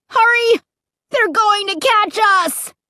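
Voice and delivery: called-out cry. Fleeing the horrors chasing them, Luke cries out. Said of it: "Luke cried".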